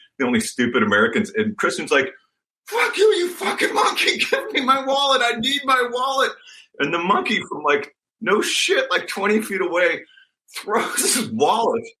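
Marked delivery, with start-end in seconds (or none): 2.7-6.3 very high-pitched, shrill, screeching yell.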